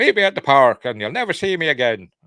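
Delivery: put-on loud, high-pitched Irish accent, belted out. Recapping a film scene, quoting what Father Brennan says: Father Brennan's Irish accent. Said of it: "in his Irish accent".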